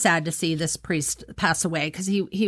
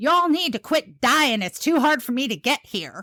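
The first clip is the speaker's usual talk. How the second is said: mock very loud, high booming voice; 7 semitones higher than usual. Retelling what mom said on seeing her favorite priest in the chapel, very loud voice. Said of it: "she says in a very loud voice".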